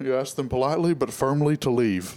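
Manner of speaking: animated-cartoon dad voice. Chatting with friends, one does a King of the Hill impression. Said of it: "That's a good impression".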